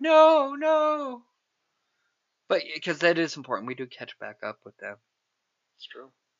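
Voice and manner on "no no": play-acted screaming, very high pitch. Recapping a scene where a character screams at the window, retelling a scream. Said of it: "he's screaming at the window like".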